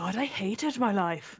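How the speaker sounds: sharp, cutting exclamation. Voicing a character who crumples old notes and looks up: said sharply. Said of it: "looks up sharply and says".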